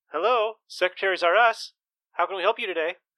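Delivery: woman's high-pitched receptionist phone voice. Voicing a woman answering the phone at a secretary service: woman answering a phone. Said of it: "A voice answers, and it's a woman".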